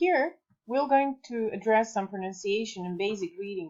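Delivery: normal talking voice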